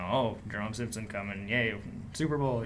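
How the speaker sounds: ordinary delivery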